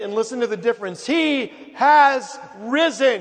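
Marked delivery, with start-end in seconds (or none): 1.1-3.2 high, loud, slow triumphant proclamation, fully meant. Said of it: "say it like you really mean it".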